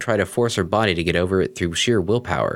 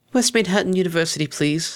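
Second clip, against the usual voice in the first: quiet, soft sniffling, much higher; 10 semitones higher than usual. A passenger tells the carriage driver where to go, sniffling quietly. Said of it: "she sniffled quietly".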